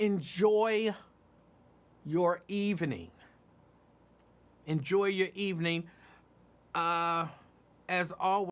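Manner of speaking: very slow, stalling, high-pitched, drawn-out delivery. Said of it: "I'm talking slow".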